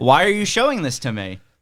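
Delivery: put-on voice of a disgusted man. Retelling a movie scene where a client sees something: imitating a disgusted man. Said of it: "he's disgusted by what he saw".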